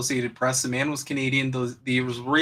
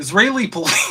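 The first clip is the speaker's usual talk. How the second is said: laughing through words, pitched up; 6 semitones higher, 6 dB louder than usual. Reading a news headline aloud, laughing while talking. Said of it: "I can't even say it without laughing".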